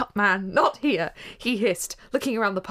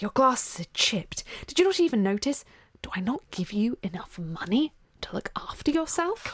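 speaking in a hiss; 3 dB quieter than usual. Narrator voicing a man leaning in toward his companion, hissing. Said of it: "Lucius hissed, leaning into Gilderoy".

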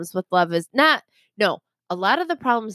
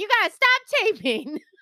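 put-on upset man yelling, pitched higher; 12 semitones higher than usual. Imitating Kenny telling cameraman Jimmy to stop taping: imitating Kenny. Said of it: "That's not how Kenny sounds at all".

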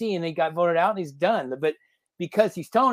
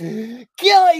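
loud, crazed, raving madman voice; 7 semitones higher, 8 dB louder than usual. Retelling how a companion killing an eel turned into a madman: imitating Ty raving like a madman. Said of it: "He turns into, like, a madman".

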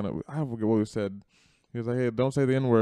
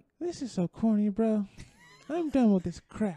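put-on very high, babyish little voice; 11 semitones higher than usual. Acting out Isaiah's complaints as if he were a six-year-old, in a baby voice. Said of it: "do a baby voice".

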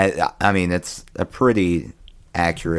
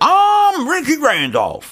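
very high, loud, sing-song country bumpkin voice; 6 dB louder than usual. Recounting a former officer's near-death experience, in a Ricky Randolph impression. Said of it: "That's how he sounds".

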